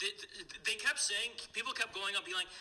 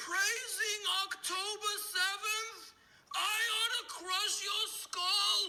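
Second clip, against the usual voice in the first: put-on angry older man voice, higher; 11 semitones higher than usual. Retelling what someone said at a venue: Norman Finkelstein impression. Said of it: "let me do the impression 'cause I'm better at it".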